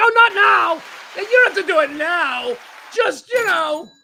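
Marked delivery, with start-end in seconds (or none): 0.0-2.5 high, slow, apologetic, guilt-ridden, backpedaling voice. Speaker acts out their mom backing off a garbage request; imitating a guilty mom. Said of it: "immediately feel guilty and be like".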